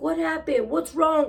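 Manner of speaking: put-on angry alarmed voice. Retelling how a son reacted on finding his mother crying: imitating an angry son. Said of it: "he was angry".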